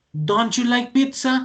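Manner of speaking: high, astonished, surprised voice. Explaining English negative questions in Spanish, asked in a surprised tone. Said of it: "Como si yo estuviera sorprendido. Y miren que la entonación ahí es muy importante".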